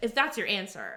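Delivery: plain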